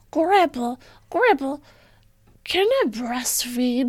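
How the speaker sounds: put-on adorable, high little kid voice. Acting out a kid talking to grandpa, in a little kid voice. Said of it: "Should I do my little kid voice?".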